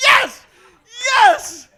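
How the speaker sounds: ecstatic, overjoyed, high-pitched, loud shout.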